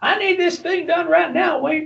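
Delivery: put-on squeaky, creaky, very high, rough demanding voice. Retelling a colleague popping into the office: Chad impression. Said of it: "That's my Chad impression".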